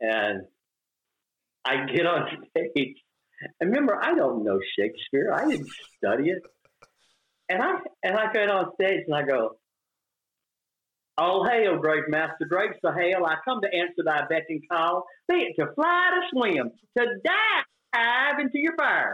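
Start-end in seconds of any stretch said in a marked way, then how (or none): 11.2-19.1 put-on strong deep Southern accent, high and slow. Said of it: "I had this deep Southern accent".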